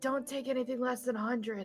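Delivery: whispered. In character, leaning over to Hex as an aside during the haggling: whispering. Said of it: "I want to whisper over to Hex".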